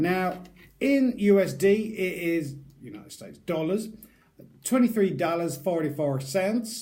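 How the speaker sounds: poor, unconvincing attempt at an American accent. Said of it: "That was a really bad, uh, American accent".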